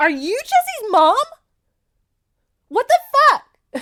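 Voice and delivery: very high, very loud, shocked freaking out. Retelling how the Duchess reacts to the maid: imitating someone freaking out. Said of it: "She freaks out just like we".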